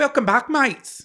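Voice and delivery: put-on Australian accent, very high. Trying a british accent for the intro, landing australian: put-on australian accent. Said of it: "No, that's Australian".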